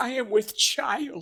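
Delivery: put-on high-pitched elderly man voice. Voicing a heroine in imagined fantasy talk, in an old man voice. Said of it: "don't know why I made her sound like an old man".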